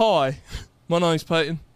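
clumsy put-on British accent. Asked for a sentence to say in british, the speaker tries: bad british accent. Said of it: "give me a sentence to say in British".

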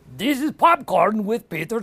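put-on cartoon villain voice. Asked to go from Gru to Drew, the guest says the show's name in a Gru voice. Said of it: "go for me from Gru to Drew".

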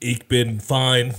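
loud robotic voice with German accent. Answering the podcast host asking how he is, German robot voice. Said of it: "That was like my German robot".

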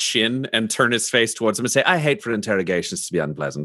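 ordinary delivery, nothing marked

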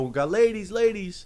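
very high, slow, drawn-out street-barker call. Retelling a strip club barker calling out to passersby: imitating a barker calling out. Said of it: "he's barking at me".

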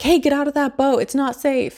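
high, freaked-out, panicky voice. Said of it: "Martin is freaking out".

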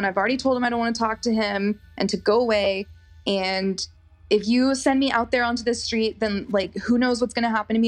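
ordinary delivery

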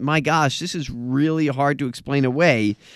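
ordinary talk

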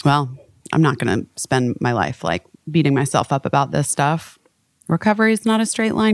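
ordinary delivery

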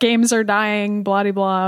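ordinary delivery

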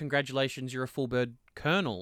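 ordinary talk

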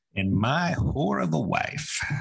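rough and creaky character voice, pushed hard. Quoting a scene from a show about a cheating wife: Jim Brockmire impression. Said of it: "That's a good impression".

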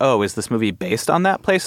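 usual speaking voice

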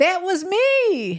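very high sudden shrill shout, me drawn out. Retelling shouting out at a concert: imitating her own shout. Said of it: "decided to go completely Tourette's and shout out".

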